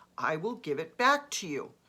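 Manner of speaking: ordinary delivery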